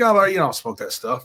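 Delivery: ordinary talk, nothing marked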